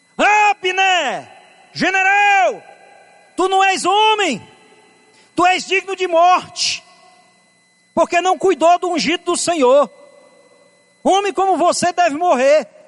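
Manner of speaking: shouted, scolding tone.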